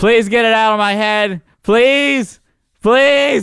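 put-on shrill, very high-pitched pleading yell. Retelling being stuck with a bee while a friend tried to help, retelling a yell. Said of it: "I'm like yelling like".

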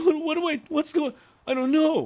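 very high, flustered, near-tearful whimper. Retelling a customer's reaction to bad news at a restaurant: imitating someone almost crying. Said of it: "almost started crying".

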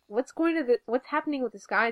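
ordinary talk

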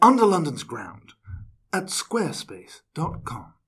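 put-on old man advert voice. Redoing a sponsor tagline in an advert voice, old man voice. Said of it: "That was more old man".

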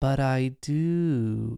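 put-on sweet little innocent kid voice, drawn-out do. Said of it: "In that sweet little, like, innocent kid voice".

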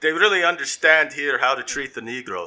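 made-up, vague put-on Eastern European accent. Describing an imagined movie about immigrants in Austin, vague made-up accent. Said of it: "I don't even know what fucking accent that's supposed to".

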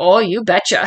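very serious, earnest delivery. Quoting a character's catchphrase: imitating Donna, very serious. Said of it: "very serious".

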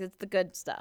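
ordinary delivery

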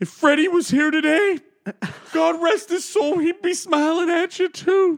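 put-on sentimental and slightly drunk. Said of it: "it goes on to him saying".

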